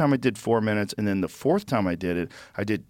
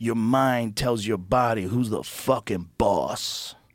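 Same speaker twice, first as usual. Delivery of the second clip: put-on heavy, thick New York accent. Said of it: "the way he says it with his like heavy New York accent".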